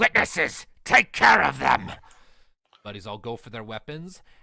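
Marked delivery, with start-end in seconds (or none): 0.0-1.9 very loud, slow, rough, gruff booming bellow. Narrator voicing the bandit leader pointing a sword at the players, shouting. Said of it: "and shouts".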